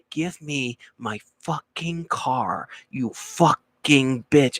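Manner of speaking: acted, drawn-out, very slow seething fury. Retelling a movie scene where Steve Martin gets angry: imitating angry Steve Martin. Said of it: "he's getting angry at the secretary".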